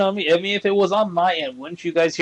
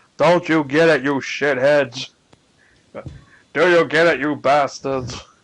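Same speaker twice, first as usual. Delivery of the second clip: put-on tough-talking mafia gangster voice; 3 semitones lower than usual. Voicing a character who denies the accusation: attempted mafia voice. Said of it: "I really cannot do a mafia voice for him".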